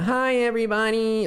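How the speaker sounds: put-on, very high-pitched camp voice.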